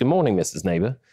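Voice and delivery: put-on laid-on, very British accent. Retelling how a child greeted his teacher: imitating a very british accent. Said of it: "in a, a very British accent".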